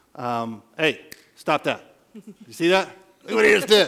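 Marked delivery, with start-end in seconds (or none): 0.2-1.8 sharp, firm, authoritative, commanding snap. Demonstrating a verbal correction, firm commanding tone. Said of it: "using a firm, commanding tone".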